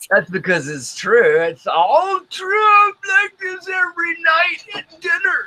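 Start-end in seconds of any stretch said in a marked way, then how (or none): 1.4-5.5 put-on high old man voice. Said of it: "sound like Old Man Jenkins from SpongeBob".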